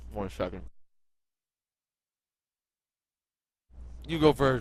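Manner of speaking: speaking through a full mouth. Asked for a prediction, the speaker answers while talking with mouth full. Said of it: "My mouth is very full right now".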